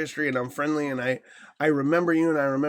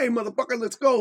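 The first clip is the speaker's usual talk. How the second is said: high, pumped-up, energetic hype; 8 semitones higher than usual. Demonstrating the voice used on stream, high-energy upper tone. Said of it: "you get an upper tone, you get an energy inflection".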